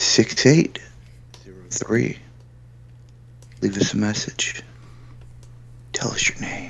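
fake seductive voice. Inviting listeners to call in a message: put-on sexy voice. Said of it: "that was [name]'s sexy voice".

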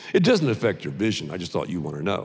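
gentle, mild doctor voice. Retelling an eye exam, quoting the doctor: imitating a doctor's soft voice. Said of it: "He talks in a soft voice".

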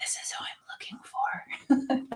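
hushed, soft, very quiet whisper. Acting out whispering a request to a tree: whispering to a tree. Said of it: "I can see you whispering to the tree".

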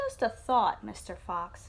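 plain

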